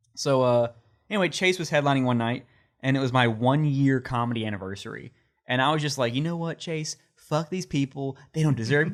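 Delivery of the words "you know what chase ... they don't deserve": put-on sarcastic tone, raised higher in pitch. Retelling what the speaker said to the headliner: retelling own sarcastic rant. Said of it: "just being a fucking dick, sarcastic".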